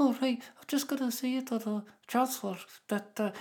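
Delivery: tiny, very high, quiet little voice. Retelling how the Labour Shadow Chancellor spoke: Annalise Dodds impression, tiny quiet voice. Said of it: "she's got a tiny little voice".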